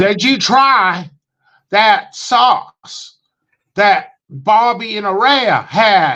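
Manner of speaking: drawling put-on southern twang, high and slow. Retelling a fan's phone call to the speaker, in a put-on southern twang. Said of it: "he had this southern twang or something".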